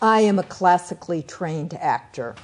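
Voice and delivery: ordinary talk, nothing marked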